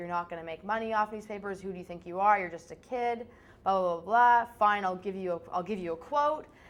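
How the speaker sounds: ordinary talk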